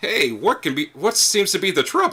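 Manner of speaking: high, swooping little halfling character voice. Voicing a short halfling who walks in and greets the party: halfling bard character voice. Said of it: "a short halfling kind of roam in, and he's like".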